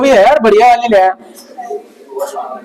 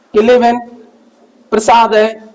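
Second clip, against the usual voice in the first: ordinary talk, nothing marked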